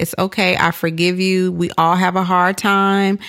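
normal talking voice

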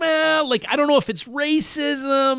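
high, slow, hesitant hedging voice.

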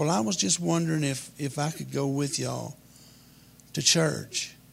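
ordinary talk, nothing marked

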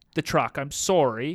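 plain

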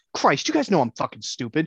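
riled-up angry outburst with swooping pitch. Retelling how Bill Burr reacts to scripted ads: imitating Bill Burr getting mad. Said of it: "he gets so mad. He goes".

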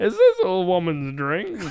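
loud voice with wildly swinging pitch. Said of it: "That is the worst Bill Cosby".

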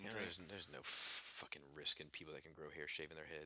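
resentful, bitter, very hushed mutter. Complaining about people who can grow hair shaving their heads: bitter tone. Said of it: "you sound so bitter right now".

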